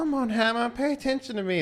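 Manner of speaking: very high, pleading, begging whine. Voicing the ladies beside the boss: the ladies pleading for attention. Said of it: "the ladies are just like".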